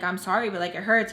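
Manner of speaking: normal talking voice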